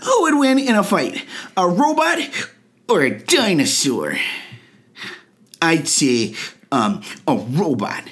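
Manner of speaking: put-on little child's voice, animated, lilting and sing-song. Reading conversation starters for kids aloud, the speaker answers in a kid's voice. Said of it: "I'll do them in a kid's voice".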